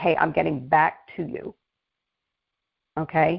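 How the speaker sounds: slow, reluctant, bothered tone. Showing the team how to call back people who filled out a form, reluctant, bothered tone. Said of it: "in a tone that, like, I don't really want to be on the phone".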